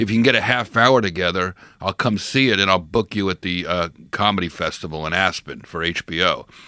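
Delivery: normal talking voice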